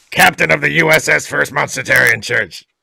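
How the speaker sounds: rough, creaky, raspy character voice. Doing another person's character voice as a joke: Fundy Monster impression. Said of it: "That's my Fundy Monster impression".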